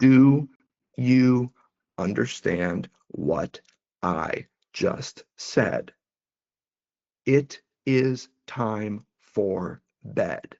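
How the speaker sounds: slow, punctuated, each word spaced and separate. Showing how people speak to children: slow, punctuated delivery. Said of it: "Their delivery gets slower, their words slow down, and they're more punctuated".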